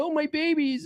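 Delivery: high, soft, whiny mock doting mom voice.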